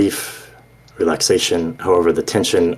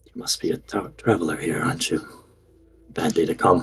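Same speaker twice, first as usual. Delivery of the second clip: secretive, hushed near-half-whisper murmur; 7 dB quieter than usual. A game master voices a stranger questioning a traveler, almost a half-whisper. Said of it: "in a very, very silent voice, almost a whisper".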